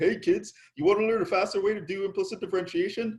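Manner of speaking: put-on, high, eager, all-excited professor voice. Teacher warning students about their next professor, imitating an excited professor. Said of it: "he seems all excited".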